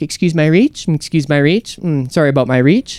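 refined, courteous, polite flight attendant voice. Imitating the first-class flight attendant leaning across the window seat: polite register. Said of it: "they talk to you in a better register".

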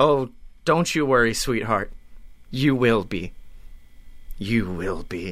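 very low, foreboding, ominous tone. In a role-play, answering a partner's threat: ominous tone. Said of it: "Why are you being ominous now?".

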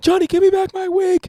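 shrill, very high, loud yelling. Acting out Amber wanting her wig back from Johnny, imitating Amber yelling. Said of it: "She's yelling".

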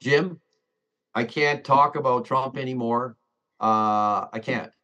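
ordinary delivery

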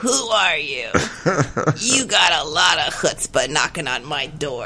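put-on rasping, scratchy elderly gentleman voice. Retelling what an elderly man said on opening his door: scratchy old man voice. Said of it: "Scratchy voice".

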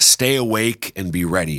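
ordinary delivery

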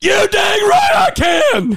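very high, very loud, booming, drawn-out movie-drama delivery. Answering a movie-quote challenge, acting out a movie scene. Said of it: "that was a little bit of, officer and gentleman in there".

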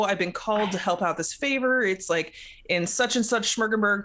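ordinary delivery

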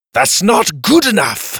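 high-pitched shouting. Kai shouts orders into the device on his forearm; yelling. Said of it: "he yelled".

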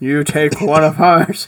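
clumsy fake Chicago accent. Doing a requested movie line: bad Sean Connery Chicago accent. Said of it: "it's really bad".

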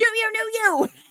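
mock shrill child's shout, very high, aggressive. Retelling how a six-year-old suddenly yelled out, imitating a kid's aggressive yell. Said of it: "of a sudden he yells out".

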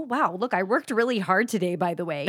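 ordinary talk

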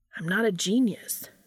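ordinary talk

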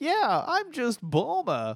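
silly sing-song, very high, goofy and drawn out. Retelling a funny line from the movie: goofy Bulma line. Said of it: "the way she said it was so goofy".

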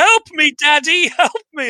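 put-on very high, frantic woman's scream. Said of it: "And she's on the front of the car screaming".

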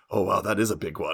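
put-on Eastern European accent. Retelling what a doctor said while feeling around the speaker's neck; Eastern European accent. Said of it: "He has this like Eastern European sort of accent".

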